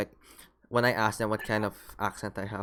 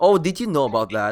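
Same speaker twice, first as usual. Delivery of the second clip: arty tune rising then falling across the whole line; 5 semitones higher, 10 dB louder than usual. Describing how a guy talks, imitating rising-falling intonation. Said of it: "So it goes up and it goes down".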